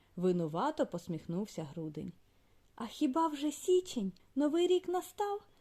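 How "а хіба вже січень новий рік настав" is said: scared, frightened, very high little voice. Narrator reading a fairy tale, voicing the child's question, frightened. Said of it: "Злякалася Оленка".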